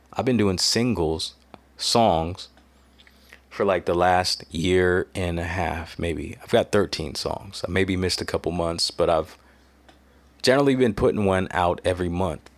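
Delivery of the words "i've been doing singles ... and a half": slow, deliberate, slowed-down delivery. Repeating a sentence they just garbled, saying it slower. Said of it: "Let me say that slower".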